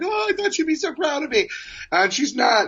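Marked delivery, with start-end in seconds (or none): 0.0-1.5 mock sobbing, high, tearful crying voice. Retelling how they reacted after a payphone call, retelling crying. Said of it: "so then I'm like crying".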